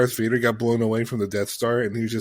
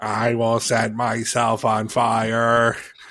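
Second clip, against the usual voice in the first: put-on electronic voice-box sound. Imitating Frieza's new filtered voice: Frieza's voice-box filtered voice. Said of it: "ninety-nine Kane with the voice box".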